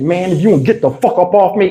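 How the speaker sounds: acted furious, angry outburst, temper gone. Retelling shouting at a man who was on top of the speaker; retelling losing it. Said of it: "I lost it".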